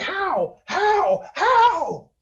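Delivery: high, shrieking, wounded-creature monster voice. Narrating a wounded creature staggering after being shot, shrieking monster. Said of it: "he shrieks".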